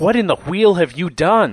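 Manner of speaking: crying out, high-pitched and loud. Narrating a struggle, a man shaken by a blow cries out: crying out. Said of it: "he cries".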